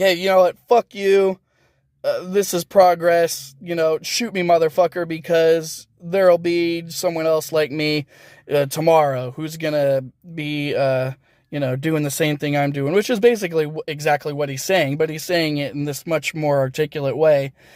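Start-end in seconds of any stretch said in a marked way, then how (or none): none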